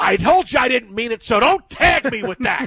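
mock mad, annoyed, high angry tone. Speaker acts out a man suddenly getting mad at him, retelling an angry reply. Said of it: "he gets, like, mad at me and goes".

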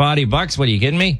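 put-on Boston-area Massachusetts accent. Answering a remark on the accent he just slipped into: Massachusetts accent. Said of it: "you just got a Massachusetts, uh, accent there".

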